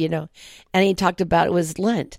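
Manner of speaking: ordinary delivery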